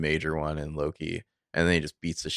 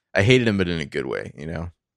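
normal talking voice

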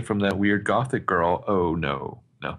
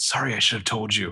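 relaxed whisper. Retelling a scene where one character apologizes to another: imitating a casual whisper. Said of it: "casually whispers to Mary".

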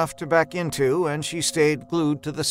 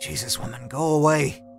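plain

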